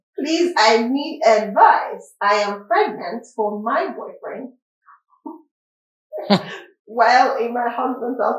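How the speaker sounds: words broken up by laughs. Reading a listener's message aloud while laughing through words. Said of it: "I'm sorry, I'm laughing".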